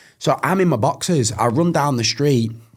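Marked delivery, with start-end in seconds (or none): none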